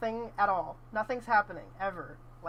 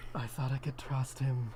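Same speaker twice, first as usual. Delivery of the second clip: put-on voice, much lower; 7 semitones lower than usual. Asked to do a lower voice, the speaker repeats the line in a lower voice. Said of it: "Now do a lower voice".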